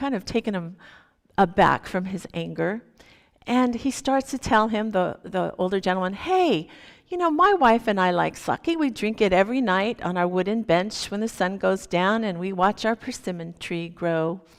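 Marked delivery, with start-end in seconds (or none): none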